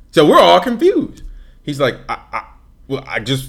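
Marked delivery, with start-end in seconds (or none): 2.0-3.4 put-on stuttering speech, quieter. Retelling how a friend answered a question, imitating a friend stuttering. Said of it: "and he's stuttering".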